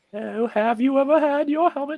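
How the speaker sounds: very high, loud, put-on British comic accent. Speaker showing how all of his accents go, in a Monty Python-style voice. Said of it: "Why do you sound like you're from Monty Python?".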